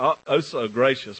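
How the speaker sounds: ordinary talk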